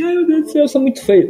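mock very high, whiny, whimpering fake crying. Criticizing a community, acting out how its members complain, mock crying. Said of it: "eles ficam só chorando".

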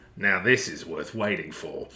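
put-on sleazy, lecherous tone with accidental Australian accent. Recapping a scene, quoting Billy's line: lecherous Billy voice, accidentally Australian. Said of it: "in the most lechy way possible".

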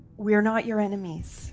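softly whispered. A player casts a whisper spell to speak to an eagle, whispering. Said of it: "it's only going to be in a whisper".

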